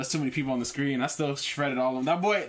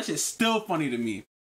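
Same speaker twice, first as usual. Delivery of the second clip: usual speaking voice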